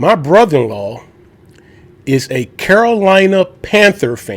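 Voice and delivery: very slow, deliberate, spelled-out emphasis. Repeating a statement so listeners don't miss it, said real slow. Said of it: "let me say that real slow".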